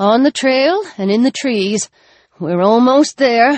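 plain reading voice

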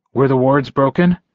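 plain reading voice

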